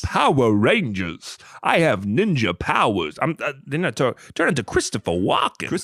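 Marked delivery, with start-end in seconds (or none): 0.0-3.2 put-on wild English accent, drawn out, stress misplaced throughout. You and another speaker try out an imitation together, doing a Matt Berry crazy English accent. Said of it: "She has got some crazy English accent".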